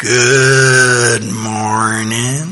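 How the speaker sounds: low, slow southern drawl, "good" stretched out. Imitating how a schoolmate from west virginia talked: slow southern drawl. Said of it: "that southern drawl".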